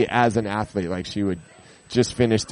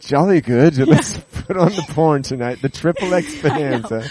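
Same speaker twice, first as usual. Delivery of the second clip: put-on, pitched-up British accent; 6 semitones higher, 4 dB louder than usual. Imagining the other speaker's British parents, in a put-on British accent. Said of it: "do they have British accents?".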